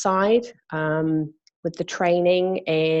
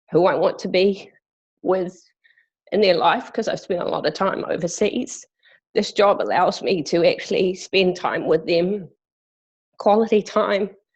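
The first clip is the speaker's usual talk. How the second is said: crying, tearful, breaking voice. Speaker sharing their personal reasons for working, crying while speaking. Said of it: "I have no idea why I'm crying".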